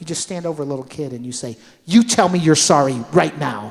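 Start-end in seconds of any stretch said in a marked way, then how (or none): 1.9-3.7 very loud, booming stern dad voice. Standing over a little kid to make him say sorry, in a dad voice. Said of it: "I have a dead vo- dad voice".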